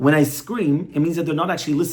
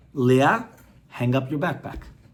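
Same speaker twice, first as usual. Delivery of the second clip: low, level, even, steady voice throughout; 3 semitones lower than usual. A mother looks her daughter in the eyes and tells her, in a low, steady voice. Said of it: "she says in a low, steady voice".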